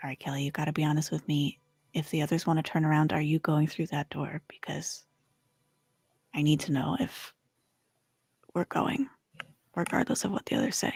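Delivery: under-the-breath murmur. Voicing a character speaking privately to a companion: said under her breath. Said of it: "she's just gonna say under her breath".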